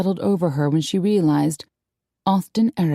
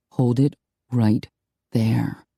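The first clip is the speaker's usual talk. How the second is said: deep, low-pitched voice; 6 semitones lower than usual. Reading a story, an unseen speaker stops a woman, in a deep, quiet voice. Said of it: "a deep voice spoke quietly".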